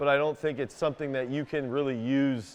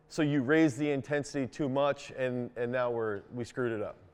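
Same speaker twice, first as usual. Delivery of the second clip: ordinary talk, nothing marked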